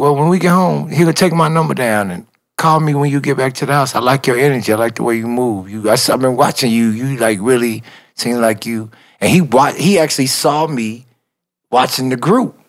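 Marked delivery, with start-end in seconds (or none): none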